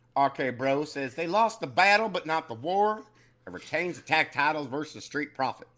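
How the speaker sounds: put-on old-fashioned deep Southern accent. Doing a whole-body impression of someone, deep old-timey southern accent. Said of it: "like a deep, like old timey South Southern accent".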